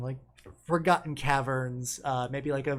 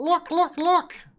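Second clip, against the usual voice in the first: very high, loud, dopey cartoon creature voice; 8 dB louder than usual. Showing how a group speaks, putting on a stupid cartoony voice. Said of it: "put on my best like uh, stupid uh, cartoony voice".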